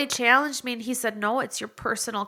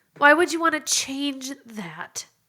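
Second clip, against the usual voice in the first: tearful, holding back tears, on the verge of crying; 3 semitones higher than usual. Speaking to listeners, barely getting through it without crying: tearful voice. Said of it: "I can't even get this through this without crying".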